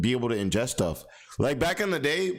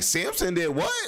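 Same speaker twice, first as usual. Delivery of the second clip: put-on, pitched-up, juicy, gossipy tone; 5 semitones higher than usual. Pretending to read a bible story aloud like someone dropping tea: put-on gossipy tea-spilling tone. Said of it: "I would probably be reading it the same type of way".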